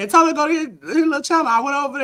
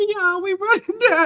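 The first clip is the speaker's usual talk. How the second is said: higher-pitched, casual, everyday speaking voice; 6 semitones higher than usual. Imitating how Jay Jordan normally sounds when running: imitating Jay Jordan's usual voice. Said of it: "you normally sound like".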